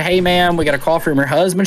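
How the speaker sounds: normal talking voice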